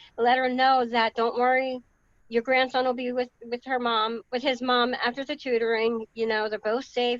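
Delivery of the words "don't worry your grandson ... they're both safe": normal talking voice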